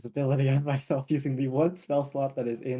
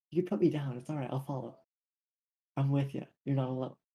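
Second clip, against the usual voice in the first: whispered, quieter; 5 dB quieter than usual. Whispering into Ryan's ear after being carried, in character: whispering. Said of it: "I'll just be whispering this into, like, Ryan's ear".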